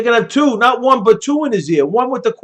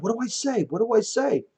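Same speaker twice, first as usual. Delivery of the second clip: hushed, half-whispered mutter under the breath; 10 dB quieter than usual. Imagining Joe at a debate asking his earpiece for help: imitating Joe half-whispering under his breath. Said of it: "whispers under his breath".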